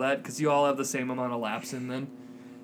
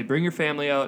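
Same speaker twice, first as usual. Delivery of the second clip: ordinary delivery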